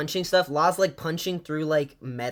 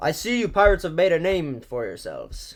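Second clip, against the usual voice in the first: enigmatic, cryptic, swooping, mysterious put-on voice. Reading out a message addressed to pirates, in a put-on mysterious voice. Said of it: "I'm just gonna do it in a mysterious voice".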